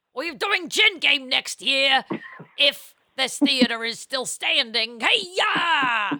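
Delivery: loud, high, belted put-on famous-actor voice. Announcing next year's play in an Al Pacino impression. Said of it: "That is a good Al Pacino".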